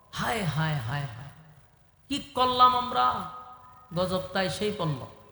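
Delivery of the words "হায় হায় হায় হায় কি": plain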